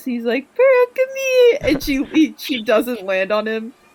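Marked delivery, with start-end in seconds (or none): 0.5-1.6 put-on very high, loud, babyish talk. Retelling how he calls pearl over to him, in a baby voice. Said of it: "Mitsurugi literally goes like baby voice".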